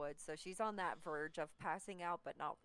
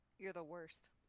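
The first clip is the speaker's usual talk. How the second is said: grumbled, barely voiced mutter under breath; 4 dB quieter than usual. Voicing a character who mutters at the one who sat her down: muttered under her breath. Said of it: "under her breath".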